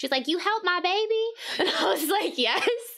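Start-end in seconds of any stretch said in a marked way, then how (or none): 0.3-1.2 put-on glam, high-pitched Southern belle accent. The speaker retells a woman's boss coming up to her; imitating a glam southern belle. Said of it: "glam Barbie Southern Belle".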